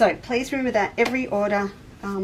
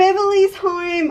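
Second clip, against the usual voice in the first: very loud, very high, shrill excited shout; 10 semitones higher, 9 dB louder than usual. Speaker chatting about the wind outside, suddenly yelling. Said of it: "sorry, I'm yelling".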